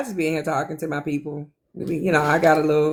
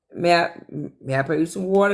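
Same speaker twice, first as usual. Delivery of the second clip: ordinary delivery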